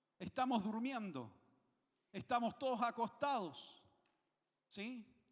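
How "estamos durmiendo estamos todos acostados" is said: normal talking voice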